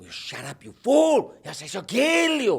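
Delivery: put-on cartoon dog voice. Voicing a cartoon exchange, the speaker replies as the other character: Ren impression. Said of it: "Ren and Stimpy".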